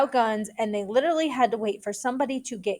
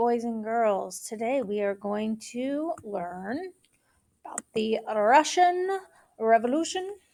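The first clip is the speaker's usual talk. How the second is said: clumsy, bad put-on Russian accent. Addressing boys and girls as if teaching a class, in a bad russian accent. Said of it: "That was the worst Russian Revolution accent I've ever".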